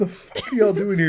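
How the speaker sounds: stunned, shocked voice. Imagining the health inspector walking in: playing a shocked health inspector. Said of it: "the health inspector's gonna show up and go".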